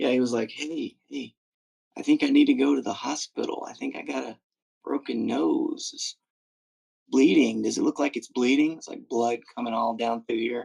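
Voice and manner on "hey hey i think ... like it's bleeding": quiet, whispered put-on voice. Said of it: "that is the way that Eric was".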